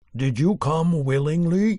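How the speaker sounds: loud, dreadful bellowing monster voice. A narrator reads Beast asking Beauty a question, Beast's terrible voice. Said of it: "asked Beast in his terrible voice".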